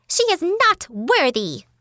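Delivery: ridiculous, absurdly high-pitched, swooping voice. Narrating a story, voicing Abbas objecting to the others, in his ridiculous high-pitched voice. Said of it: "in that ridiculous high-pitched voice of his".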